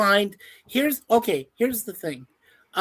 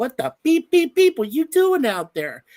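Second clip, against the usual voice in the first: put-on, pitched-up mild yell; 5 semitones higher than usual. Recalling being swept far from shore, the speaker imitates their dad yelling at them. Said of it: "my dad is yelling at me like".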